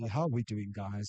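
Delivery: close-miked, straight-into-the-mic radio announcer voice. Speaking straight into the mic to greet the guys in a radio voice. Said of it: "if I go straight into the mic, I can speak. The radio voice can come out".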